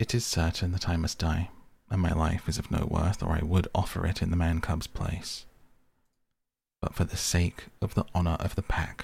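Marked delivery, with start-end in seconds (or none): none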